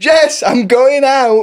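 put-on very slow, dismissive, aggressive drawn-out yell. Retelling how he shouted on the way out: imitating a dismissive aggressive shout. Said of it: "He just shouted that, but in a really dismissive, aggressive, horrid way".

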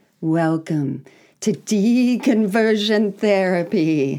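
spooky, creepy put-on scary voice. Opening the Halloween edition with a welcome: put-on scary voice. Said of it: "That's the scary voice of [name]".

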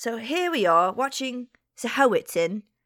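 put-on accidental slip into Cockney accent. Trying to open a nature documentary line, slipping into cockney accent. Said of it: "I went really weird English there".

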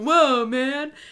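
surfer-style voice. Discussing the story with another speaker, voicing Rhys as a surfer dude. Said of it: "He's totally a surfer dude".

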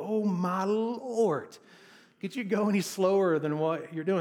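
sarcastic, frustrated, exasperated, loud and high-pitched. Stuck behind a slow car, the speaker retells their own sarcastic, frustrated remark. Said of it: "So it's like this sarcastic, frustrated kind of thing".

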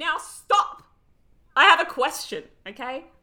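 full-on high, loud yell into the mic. Speaker interrupting a recap to ask a question, yelling into the microphone. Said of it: "I'm yelling into the microphone".

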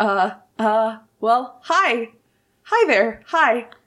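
nervous, panicked, flustered stammering voice. Voicing a blacksmith who stops in his tracks when visitors enter: nervous panicked stammer. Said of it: "looks, like, a little panicked and kind of nervous".

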